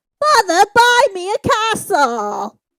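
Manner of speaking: put-on very high, loud, shrill, swooping little-girl puppet voice. Speaker quotes a line from Willy Wonka, Charlie and the Chocolate Factory impression. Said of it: "your voice changed like something".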